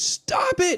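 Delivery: screaming, shouting. Acting out an anime line, then saying parents are asleep: screaming. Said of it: "when I'm not screaming".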